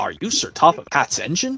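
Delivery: normal talking voice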